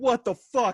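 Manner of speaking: mock gangster-tough, angry, high-pitched woman's voice. Husband retelling a scary moment with his wife, imitating her angry yell. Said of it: "she can get to that voice".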